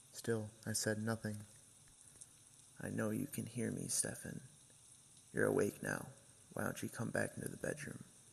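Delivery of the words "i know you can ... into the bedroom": rough, low, gravelly, barely human witch voice. Telling a story, voicing a voice calling Stefan to the bedroom, low and gravelly like a witch. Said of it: "It was much lower and gravely, ... It was the same low and gravelly voice. It sounded like a witch".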